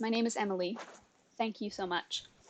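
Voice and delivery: speaking softly. Voicing a rescued woman thanking the party: quiet voice. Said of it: "she quietly goes".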